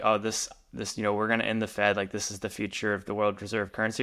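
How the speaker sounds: ordinary talk, nothing marked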